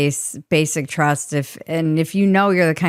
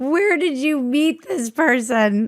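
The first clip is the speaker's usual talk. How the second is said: put-on very high, wistful, longing young-sounding voice; 9 semitones higher than usual. Retelling a question from a girl in the front row: imitating a longing young voice. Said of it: "you could hear just her, like".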